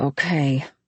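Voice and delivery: whispering. Reading a story where a man agrees on the phone: whispered. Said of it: "he whispered".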